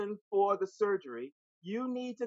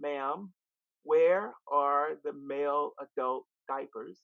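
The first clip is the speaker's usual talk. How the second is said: voice dropped as low as it goes, deepest possible; 5 semitones lower than usual. Retelling asking a store clerk something, in the lowest voice possible. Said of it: "I said in my lowest voice".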